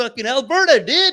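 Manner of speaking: loud, brash dude voice. Imitating how the comedian coming tomorrow talks: imitating a friend's voice. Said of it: "he sounds like that".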